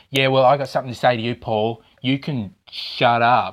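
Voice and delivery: put-on Queensland accent. Bringing back a voice listeners asked for, in a Queensland accent. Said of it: "Leave it up to a Queenslander to do that accent".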